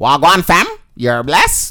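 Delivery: man's put-on voice with Toronto accent. Joking about Toronto slang, the speaker demonstrates a put-on Toronto slang voice. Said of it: "It's the voice that the Toronto man's, quote unquote, put on".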